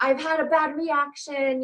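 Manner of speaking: mock-panicked, put-on freaking out. Retelling a phone call from someone who had a bad reaction, imitating someone freaking out. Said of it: "And she's freaking out".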